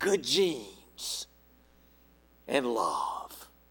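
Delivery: low, hushed, barely audible rasp. Retelling a ballplayer answering a reporter's question, raspy Buck O'Neil impression. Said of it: "Buck O'Neill rasped".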